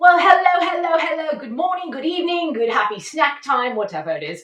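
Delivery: fake British accent, welcoming host-like tone. Show host greeting everybody at the start, in a fake British accent. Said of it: "a British accent because today's guest isn't British".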